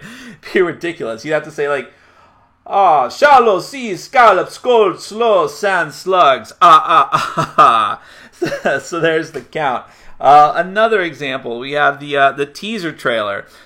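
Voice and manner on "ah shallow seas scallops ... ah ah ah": loud, slow Transylvanian vampire accent, heavily rolled. Demonstrating a persona for saying the tongue twister, in the Count vampire voice. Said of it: "speak like a Transylvanian vampire".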